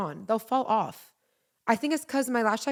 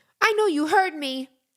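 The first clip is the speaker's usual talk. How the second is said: put-on high-pitched, loud, accusing child's voice; 5 semitones higher, 5 dB louder than usual. Retelling how a daughter stomped into the room: imitating Muchi. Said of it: "She stomps in the room and goes".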